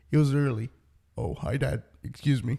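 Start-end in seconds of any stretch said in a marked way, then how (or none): 1.1-2.5 put-on kid voice, lower and quieter. Retelling being startled by a kid at home, imitating the kid. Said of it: "I did the perfect ex-, impression".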